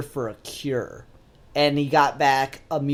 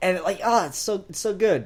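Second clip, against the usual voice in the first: normal talking voice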